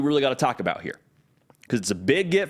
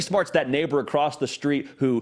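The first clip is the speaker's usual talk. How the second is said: ordinary delivery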